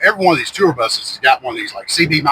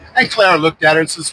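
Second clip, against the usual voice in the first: ordinary talk, nothing marked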